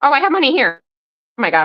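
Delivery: cracking voice. Counting out quarters, the speaker notices her voice cracking; voice cracking. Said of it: "my voice is cracking".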